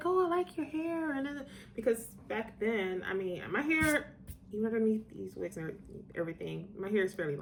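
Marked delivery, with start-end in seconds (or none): 0.0-1.1 high, sweet, flattering put-on voice. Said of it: "She was like".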